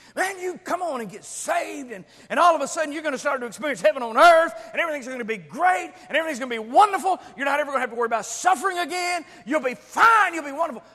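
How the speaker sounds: mocking preacher style, loud, high, fast hype.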